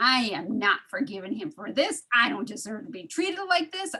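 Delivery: put-on stewing, resentful anger. Retelling resentful thoughts while weeding after an argument: imitating own stewing anger. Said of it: "I was stewing".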